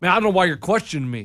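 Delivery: frustrated tone of voice. Retelling a door-to-door seller's reply: imitating someone frustrated. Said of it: "he got all fr-, frustrated with me".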